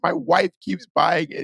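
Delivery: tearful, sobbing, high crying voice. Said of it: "And he's, like, crying".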